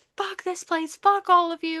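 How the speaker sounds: high, furious, losing-it screaming outburst. Retelling a book scene where she smashes her bookcases: imitating someone screaming. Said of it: "She's screaming".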